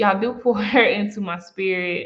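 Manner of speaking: fighting back tears, voice on the edge of crying. Thanking listeners for their feedback and support: trying not to cry. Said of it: "I'm trying to stop crying".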